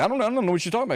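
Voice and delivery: very high, rushed, fast stammer. Mocking a denial about shoes: imitating Marco Rubio stammering. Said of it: "stammering, stuttering".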